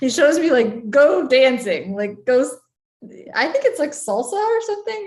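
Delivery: helpless laughter through the words, swooping pitch. Passing on advice to try something new, laughing while talking. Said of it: "I'm sorry, I'm laughing".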